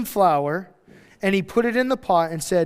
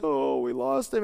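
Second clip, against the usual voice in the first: put-on slow, heartbroken, sorrowful lament; 4 semitones lower, 4 dB quieter than usual. Retelling what mourners say at a funeral: imitating sad mourners. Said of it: "and it's so sad".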